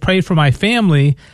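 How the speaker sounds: usual speaking voice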